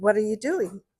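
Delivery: put-on strong British accent. Retelling a childhood story, the speaker quotes the woman across the street, strong British accent. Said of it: "in her very strong British accent".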